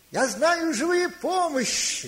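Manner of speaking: woman's loud, high, slow calling voice.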